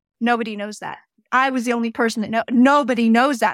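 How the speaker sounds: normal talking voice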